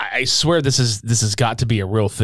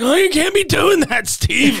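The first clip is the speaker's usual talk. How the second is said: very high, slow, raspy voice; 4 dB louder than usual. Imitating Pillman scolding Steve: Pillman's raspy voice. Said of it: "Pillman's, like, raspy voice".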